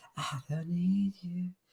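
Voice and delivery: very slow, hushed, eerie, haunting half-whisper. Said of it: "I'm even, like, whispering now".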